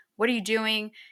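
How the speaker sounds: angry, snapping outburst. Retelling how Joel snaps at Ellie in the game: imitating Joel snapping angrily. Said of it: "Joel gets mad at her and he snaps".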